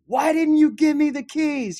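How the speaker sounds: loud, very high, tearful crying yell rising upward. Speaker retells yelling at their dad in the sky: retelling yelling at heaven. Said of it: "I'm like yelling at heaven".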